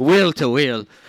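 put-on Irish accent. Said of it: "That was an Irish accent".

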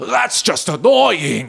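put-on high, drunken shouted yell. Retelling a wedding guest's outburst during the maid of honor speech: imitating a drunken yell. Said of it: "he just drunkenly yelled out".

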